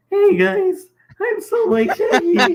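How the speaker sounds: very high-pitched, loud, belted cartoon voice. Joking that they all sound like a cartoon character, the speaker does a Shaggy voice. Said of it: "we all sound like Shaggy".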